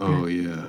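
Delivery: very low bassy voice. Imitating the other speaker's grunting just now: imitating a bassy voice. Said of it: "Very bassy. You were down here".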